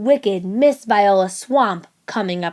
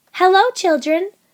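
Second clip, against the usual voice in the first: sugary, sweet, very high voice; 10 semitones higher than usual. Reading a story aloud, someone greets the waiting children: sweet voice. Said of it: "someone said in a sweet voice".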